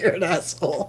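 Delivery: talking through laughter. Teasing the co-host after a laughing fit, laughing while talking. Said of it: "I can't stop laughing".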